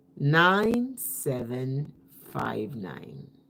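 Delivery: slow, deliberate, careful pace. Giving listeners a phone number to call, read slow and deliberate. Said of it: "call these numbers as slowly as I can".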